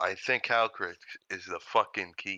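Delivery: hushed whisper. A player whispers privately to the rest of the group, whispering. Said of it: "I'm gonna whisper to the group".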